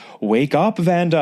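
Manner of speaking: eerie, high, ghostly spirit voice. Retelling how she posed as Vanda's ancient Egyptian spirit guide over an intercom, ghostly spirit voice. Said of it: "it's like this ghostly voice throughout the house".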